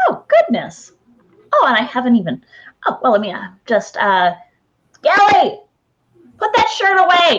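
high, flustered, fussing mom voice. Narrator voicing a player's mom calling from inside, mom character voice. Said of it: "It's your mom".

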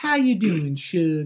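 put-on Southern accent. Imitating Nancy from King of the Hill calling people Suge: Nancy from King of the Hill impression. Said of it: "I tried".

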